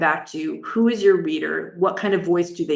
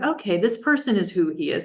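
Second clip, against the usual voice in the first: ordinary delivery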